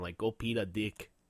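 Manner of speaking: put-on Mexican accent. Joking about how peta sounds, the speaker says it in a mexican accent. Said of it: "it kind of sounds like a Mexican accent".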